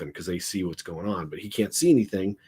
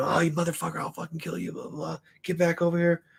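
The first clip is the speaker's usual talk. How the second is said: mock angry yelling, high pitched; 9 semitones higher, 3 dB quieter than usual. Retelling how a man kept yelling at you as you walked on, imitating someone yelling. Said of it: "and he keeps yelling".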